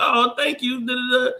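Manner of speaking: put-on very high, drawn-out, girlish voice. Retelling how girls at a bar thank a friend who pays: imitating girls thanking him. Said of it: "you know how girls do".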